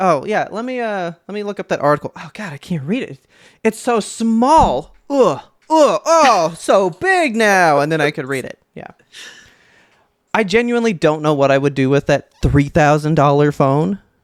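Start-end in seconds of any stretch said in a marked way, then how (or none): 0.0-7.8 slow, high, fumbling, groaning struggle. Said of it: "I'm gonna be like".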